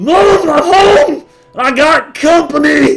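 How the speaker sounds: very loud, very high, drawn-out hollered yell. Opening the building's door without knocking, a man yells inside: yelling. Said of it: "he yells".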